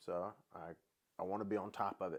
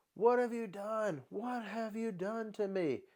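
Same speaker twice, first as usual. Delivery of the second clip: piercing, very high-pitched, full-lungs screaming shriek; 12 semitones higher, 3 dB louder than usual. Retelling how a woman sat up in bed mid-treatment, imitating a woman screaming. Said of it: "just starts screaming to the top of".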